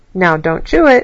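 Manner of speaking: playfully stern, strict only in play. A nurse placing a thermometer in your mouth: mock-stern. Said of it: "saying in a mock, sternful voice".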